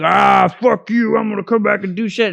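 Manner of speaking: rough, creaky, rasping character voice. Retelling a game fight, quoting the defeated boss: God King Skovald voice. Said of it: "and he's like".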